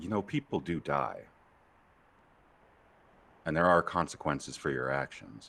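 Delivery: very soft, hushed, barely-there voice. Game narrator voices someone interrupting Lou's reverie: very quiet voice. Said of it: "interrupted by a very quiet voice".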